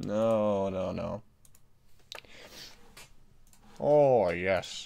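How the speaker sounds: very slow, deep, drawn-out delivery. Doing an unexplained impression of Churchill while editing a picture. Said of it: "I just did an impression of Churchill".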